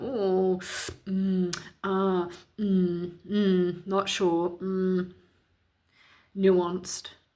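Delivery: very slow, umming, uncertain, put-on drawl. Speaker describes a celebrity's tone of voice, mimicking Dawn French's hesitant tone. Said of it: "she's using the tone of voice that is".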